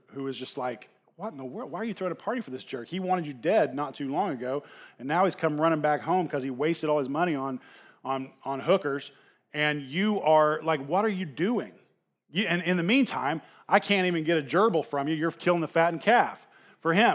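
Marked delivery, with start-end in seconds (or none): none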